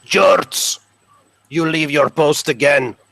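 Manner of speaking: screeched delivery. Describing a game scene, a character approaches the boy from behind, screeching Sergeant Reynard voice. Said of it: "a screeching voice".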